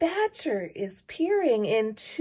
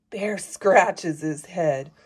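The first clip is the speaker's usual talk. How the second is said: ordinary delivery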